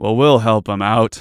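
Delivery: very loud, booming, grand heroic voice. A player speaking in character during a role-play, very heroic. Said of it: "he says very heroically".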